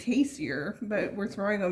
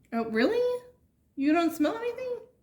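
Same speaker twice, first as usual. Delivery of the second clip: squeaky, very high-pitched voice; 11 semitones higher than usual. Reacting with surprise to another taster who smells nothing: high-pitched voice. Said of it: "Why did my voice get so high-pitched?".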